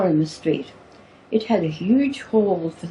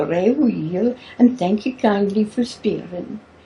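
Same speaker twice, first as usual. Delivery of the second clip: trying hard, put-on Scottish accent. Speaker retelling her reply to a woman's greeting, in her best put-on scottish accent. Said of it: "in my best Scottish accent".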